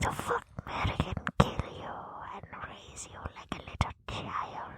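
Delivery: whispered creature voice. Speaker introducing the game Fuck, Mary, Kill Race, in a Gollum voice. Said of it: "You sound like Gollum".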